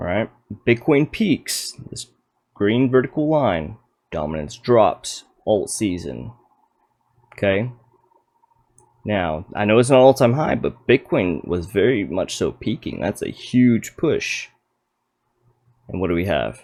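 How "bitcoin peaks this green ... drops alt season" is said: slow, deliberate, each phrase laid out with care. Explaining a chart to viewers, saying it slowly. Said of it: "I'm gonna say it a little slowly".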